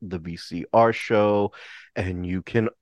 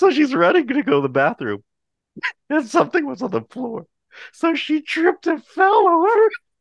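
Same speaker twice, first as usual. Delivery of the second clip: high-pitched, fast talking through laughter. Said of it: "I'm already laughing".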